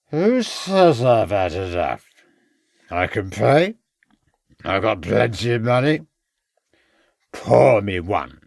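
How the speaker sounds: put-on words slurred and running together drunkenly. A man at a bar answers the landlord who cut him off, slurred voice. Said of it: "continued the man in a slurred voice".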